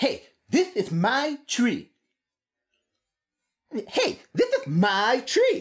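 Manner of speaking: snapped-out line, pitch rising. Voicing a caterpillar in a story for a listener, snapping the line out. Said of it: "just snap that out at her".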